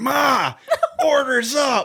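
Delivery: loud high-pitched yelling.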